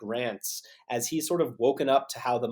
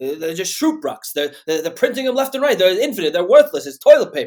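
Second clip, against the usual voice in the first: rattled off loud in put-on Boston accent; 7 semitones higher, 12 dB louder than usual. Act out a man's epic rant about the dollar, imitating a Boston accent. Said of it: "he's got this like Boston accent".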